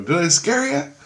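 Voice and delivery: put-on very high, shrill, loud screaming. Retelling calling out to his wife: imitating a scream. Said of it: "I screamed out".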